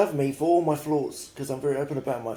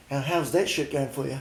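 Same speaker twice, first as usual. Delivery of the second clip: ordinary delivery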